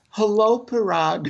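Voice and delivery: guileless, all innocence. Retelling a greeting to someone who ignored him: imitating own innocent voice. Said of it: "in the most innocent voice".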